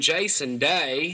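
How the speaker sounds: put-on Australian accent. Trying it on My Beast of the Week: Jason Day Australian accent. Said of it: "I got my Australian accent".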